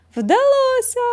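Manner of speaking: delighted, joyful cry, pitched very high. The principal bursts into the room: joyful exclamation. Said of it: "радісно вигукнула вона".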